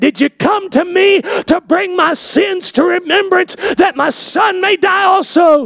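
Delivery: high, play-acted, desperate voice. Speaker retells a grief-stricken mother's words to listening parents, desperate. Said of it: "you hear the desperation in her voice".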